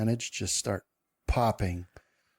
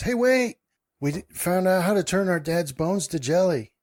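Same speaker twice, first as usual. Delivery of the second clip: put-on high, excited small-girl voice calling out; 8 semitones higher, 4 dB louder than usual. Describing the scene to the group, voicing one of two girls: little girl shouting. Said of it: "One of them shouts".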